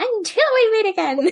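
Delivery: squeaky, very high, loud meme voice. While recapping an episode, the speaker tries a meme's voice: imitating a meme voice. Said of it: "I tried doing the voice".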